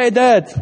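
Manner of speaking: high, loud, tossed-off casual delivery. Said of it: "a child comes like".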